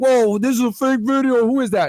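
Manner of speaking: high, loud mock skeptical voice. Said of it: "So I know some of you are like".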